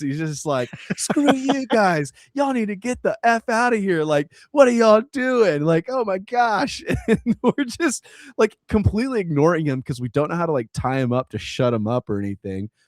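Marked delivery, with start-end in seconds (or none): 1.0-6.8 play-acted hostile man's high-pitched yell. Retelling a hostile guy who screamed at the group, the speaker is imitating someone yelling. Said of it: "just yelling at us".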